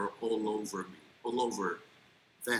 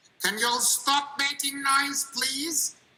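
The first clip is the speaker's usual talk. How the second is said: shrill, very high-pitched, very loud call; 8 dB louder than usual. Teaching example of asking learners to stop making noise, very high pitch. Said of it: "I have used a terribly high pitch. I've elevated the volume a little".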